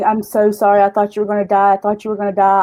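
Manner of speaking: sobbing and tearful, crying through every word. Recounting a woman's words after the speaker's overdose, imitating someone sobbing. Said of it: "she was sobbing and just going".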